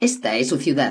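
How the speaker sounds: usual speaking voice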